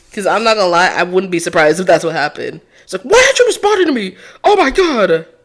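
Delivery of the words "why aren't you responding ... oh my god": mock, very high, drunken shouting. Guessing what a drunk suspect did at the body: imitating Bucky yelling drunk. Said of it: "yelled at the corpse that wasn't paying attention to him".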